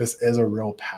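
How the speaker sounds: ordinary delivery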